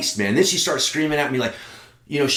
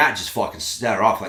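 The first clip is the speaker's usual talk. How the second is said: plain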